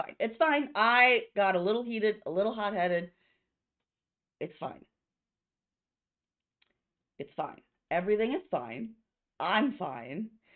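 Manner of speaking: voice gradually cracking and breaking apart. Playing a character insisting she is fine after getting heated: voice slowly cracking. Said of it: "her voice slowly cracking".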